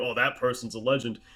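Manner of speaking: put-on ironic, teasing, sarcastic tone. Recalling commenting on graffiti during long drives with family: retelling a sarcastic remark. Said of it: "sarcastically saying".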